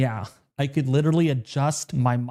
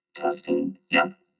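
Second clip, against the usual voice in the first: robotic voice, much lower; 10 semitones lower than usual. Demonstrating a voice changer setting, robot voice. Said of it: "It's like a robot".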